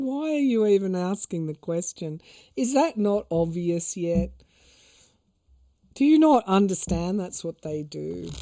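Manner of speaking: put-on talking through laughter. Quoting one of the guides answering the question: imitating someone laughing while talking. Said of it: "one of my guides sort of laughing and going".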